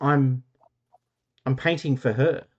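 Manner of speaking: bewildered, uncertain, confused and halting. Retelling what a man said about his painting: imitating a confused voice. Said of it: "in a voice, quite confused voice, actually, goes".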